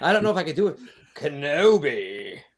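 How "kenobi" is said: acted villain character voice. Asked by another speaker for their best Maul Kenobi, doing a Maul voice saying Kenobi. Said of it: "can you give us your best Maul Kenobi?".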